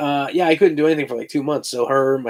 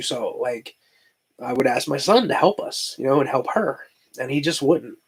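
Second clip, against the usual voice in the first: emotional, feeling it, voice getting choked up. Telling a personal family story, getting emotional. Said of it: "I'm getting emotional. You hear this?".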